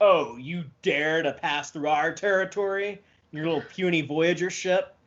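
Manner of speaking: put-on super confident, cocky, lordly jeering tone. Imitating a captain taunting voyager: super confident and cocky captain. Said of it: "super confident and cocky".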